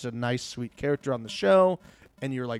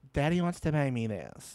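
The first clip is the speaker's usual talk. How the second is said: put-on rich, spoiled Beverly Hills girl voice; 5 dB quieter than usual. Describing a show character, a Beverly Hills girl; [name]'s Beverly Hills girl voice. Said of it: "she talked like this the whole time".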